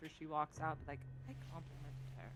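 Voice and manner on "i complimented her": muttered quietly under the breath. Looking at the dragoness after she walks out, a player's character mutters under breath. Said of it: "kind of under my breath".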